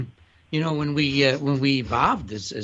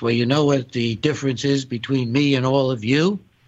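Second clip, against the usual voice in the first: ordinary talk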